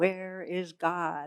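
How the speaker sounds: very stern, demanding tone. Retelling the clergyman asking again: imitating a sterner question. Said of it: "says it even more sternly".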